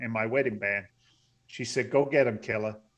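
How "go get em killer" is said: ordinary talk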